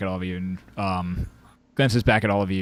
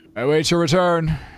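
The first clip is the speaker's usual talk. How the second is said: very high, loud shouted call; 9 semitones higher, 6 dB louder than usual. Voicing a character who calls after the departing party: shouting as Harshnag. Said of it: "he shouts out".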